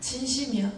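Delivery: angry, high, sharp voice.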